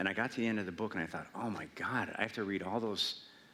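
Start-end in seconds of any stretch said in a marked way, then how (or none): none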